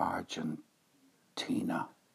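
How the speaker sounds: slow, soft whisper.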